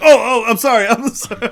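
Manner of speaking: mock frantic, furious, very loud, high-pitched voice. Retelling how a man caught in a bathroom stall kept saying sorry: imitating someone apologizing furiously. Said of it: "furiously apologizing to me".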